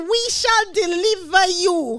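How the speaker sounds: put-on strong Nigerian accent. Quoting a minister's words: imitating a strong Nigerian accent. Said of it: "strong Nigerian accent in that".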